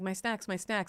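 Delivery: put-on exhausted, tired voice. Retelling a marathon runner reaching her boyfriend, imitating an exhausted runner. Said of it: "super tired".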